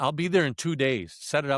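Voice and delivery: ordinary talk, nothing marked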